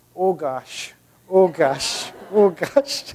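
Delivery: put-on Minnesotan accent, drawn out. Retell how Miles reacted with every step on a steep trail, in Miles's Minnesotan accent. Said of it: "in this like great kind of Minnesotan accent".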